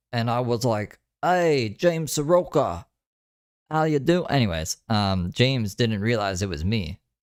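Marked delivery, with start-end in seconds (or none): 1.2-4.2 fake Australian accent, higher pitch. Retelling talking to James, who didn't recognize the speaker, in a fake Australian accent. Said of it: "I was trying to sound Australian".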